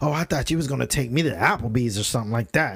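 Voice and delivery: giddy, excited woman's voice. Retelling what a date said about applebee's: imitating a giddy date. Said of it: "she was sitting there all giddy".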